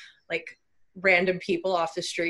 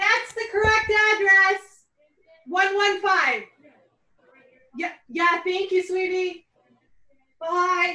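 very high, loud yelling; 12 semitones higher, 4 dB louder than usual. Calling out to a delivery driver outside about the address: yelling to a delivery driver. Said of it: "I need to yell at the U P S guy".

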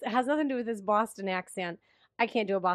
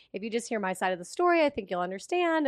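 ordinary talk

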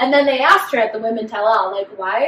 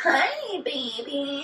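weird, fake, affected flirty voice; 4 semitones higher, 9 dB quieter than usual. Imitating a contestant switching to her fake voice around a man: imitating a put-on flirty voice. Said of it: "would do this weird".

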